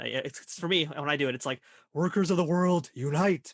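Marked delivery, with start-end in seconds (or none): 1.9-3.5 meek, fearful, timid storybook lion voice. Talking about voice impressions, the speaker shows his attempt: Rom voice sounding like Cowardly Lion. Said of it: "I always end up kind of sounding like the Cowardly Lion".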